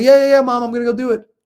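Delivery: put-on very loud, very high-pitched, childish dismissive tone. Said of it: "And I'll say".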